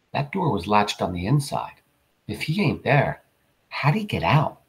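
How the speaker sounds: usual speaking voice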